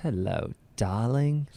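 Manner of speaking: put-on British accent. Asked why he has no British accent, imitating his mother's British accent. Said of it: "So you can turn it on".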